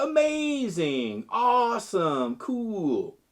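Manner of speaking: pitch rises then falls on amazing, awesome, cool. Explaining vocal inflection, demonstrating example words with a rising and falling tone. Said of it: "both a rising and falling tone".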